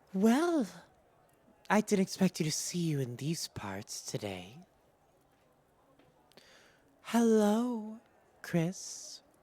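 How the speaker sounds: light, relaxed bantering tone. The narrator voices a woman greeting a player's character, in a friendly bantering tone. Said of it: "This is friendly banter".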